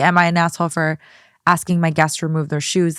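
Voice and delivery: normal talking voice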